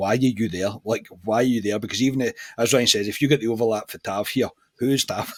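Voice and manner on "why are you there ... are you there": normal talking voice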